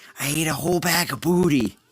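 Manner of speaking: confiding, secretive half whisper. Hosts recall a clip, one quoting how she said it in a half whisper. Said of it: "in a half whisper where she's like".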